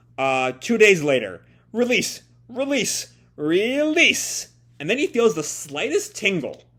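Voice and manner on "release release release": shrill, very high yelling. Narrating a character straining to control it, Tokyo shouting. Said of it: "I've been shouting so much as, as Tokyo there".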